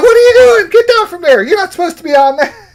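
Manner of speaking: play-acted very high, rapid, scolding yell. Retelling teachers catching you on the big slide at school: imitating teachers yelling. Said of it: "They're yelling at me".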